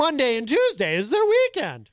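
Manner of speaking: very high, swooping up-and-down teasing sing-song voice. Imitating a coworker's impression of oneself. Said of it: "as Gonzo would say when doing his impression of me".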